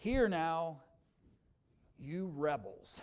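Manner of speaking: weary, exasperated, frustrated tone, very slow and drawn out. Reading Moses's words to the rebels: imitating a frustrated Moses. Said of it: "That's the voice of a frustrated leader".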